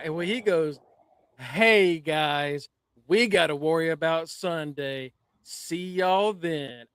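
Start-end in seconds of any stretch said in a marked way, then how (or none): 1.4-6.7 slow, cheesy, corny sitcom-style acting. Retelling a wrestling segment, imitating Tavion's cheesy Saved by the Bell acting. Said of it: "Saved by the Bell ass acting".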